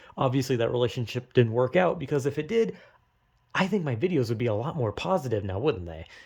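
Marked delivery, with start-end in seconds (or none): none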